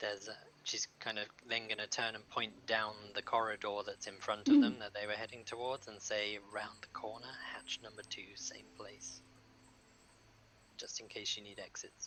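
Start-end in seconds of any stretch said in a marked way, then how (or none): 6.5-12.1 hushed whispering, noticeably quieter. Pointing down the corridor to show the others the exits, whispering.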